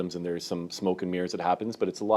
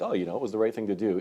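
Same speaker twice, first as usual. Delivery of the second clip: ordinary talk, nothing marked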